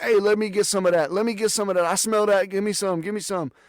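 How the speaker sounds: mock, high, eager attendant-style hollering over a mic. Retelling how ride attendants acted on the mic: imitating someone screaming. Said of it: "started screaming on the mic".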